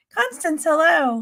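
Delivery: high, cracking, breaking voice. Greeting someone by name, voice cracking. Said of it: "My voice is cracking".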